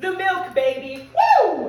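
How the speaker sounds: gleeful, triumphant, high, loud laughing whoop.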